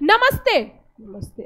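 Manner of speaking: curt, short, slap-like delivery.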